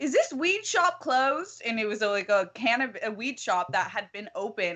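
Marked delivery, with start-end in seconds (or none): 0.0-1.6 put-on British accent, much higher. Retelling what a man asked from twenty feet away, in a put-on British accent. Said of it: "he has a British accent".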